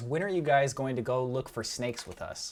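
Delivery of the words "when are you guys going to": usual speaking voice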